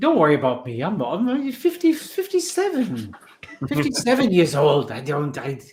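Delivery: slight, sing-song put-on French accent. Retelling how he used to mock people during training, little French voice. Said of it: "with that little French voice".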